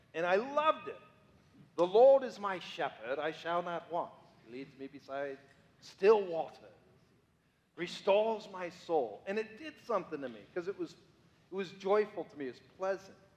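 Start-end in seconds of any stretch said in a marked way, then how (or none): 1.7-9.2 put-on reading in an English accent. Speaker showing how he used to read the Psalms aloud, in an English accent. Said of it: "I'd read the Psalms in an English accent".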